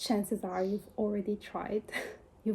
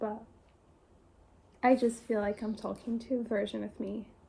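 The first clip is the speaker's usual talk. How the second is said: tearing up, choked up, close to tears. Speaking directly to the audience about a hard moment, tearing up. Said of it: "I'm tearing up".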